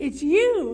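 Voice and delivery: very loud, joyful, jovial shout. Reading Jordan rushing up to Brandon: cried jovially. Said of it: "he cried jovially".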